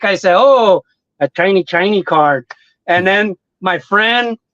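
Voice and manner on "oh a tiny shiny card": sarcastic, unimpressed tone. Retelling own reaction on getting a shiny card from a pack, retelling a sarcastic remark. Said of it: "I kind of was more like uh sarcastic".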